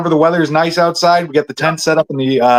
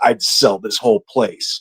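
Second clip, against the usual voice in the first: very low, slow, muttered under the breath; 7 semitones lower, 4 dB quieter than usual. Retelling what the older shop owner said: imitating a mutter under breath. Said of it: "Under his, under his breath, he just goes".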